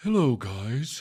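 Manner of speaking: put-on dog voice. Imagining what the dog Z would say by the fire pit: imagined voice of the dog Z. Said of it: "we imagine his voice around the fire pit".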